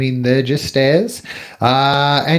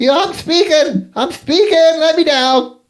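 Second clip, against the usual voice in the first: very high, full-panic creature voice; 11 semitones higher than usual. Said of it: "start going in full panic mode".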